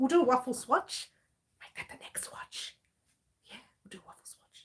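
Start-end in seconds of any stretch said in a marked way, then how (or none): 1.6-4.7 soft, breathy, hushed whisper. Talking to viewers, whispering quietly. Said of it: "Why am I whispering?".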